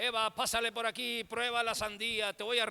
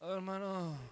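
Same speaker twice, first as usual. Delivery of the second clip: feeble, weak, soft, sickly-sounding voice; 3 semitones lower, 6 dB quieter than usual. Talking to a brother, putting on a weak, sickly voice. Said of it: "Hasta hacemos voz de enfermo".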